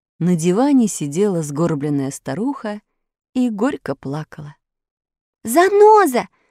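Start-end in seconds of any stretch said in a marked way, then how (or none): 5.4-6.2 very high, loud, high-pitched calling out. Entering a room, a woman addresses a weeping old woman, calling loudly. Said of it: "громко позвала ее Алиса".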